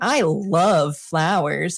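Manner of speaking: dry sarcastic reading that can't sound sincere. Retelling an improv scene the teacher made them repeat: imitating own sarcastic line reading. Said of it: "could not get the line to not sound sarcastic".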